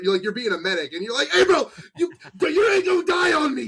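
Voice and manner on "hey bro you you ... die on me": very high-pitched, loud, urgent yell. Acting out being a game medic screaming at a friend: imitating screaming at a friend. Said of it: "playing Battlefield and screaming at your fr-".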